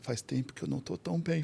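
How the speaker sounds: very quiet, hushed, barely above a murmur. Retelling the reply to a wife after praying: imitating speaking softly. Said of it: "Falando baixinho".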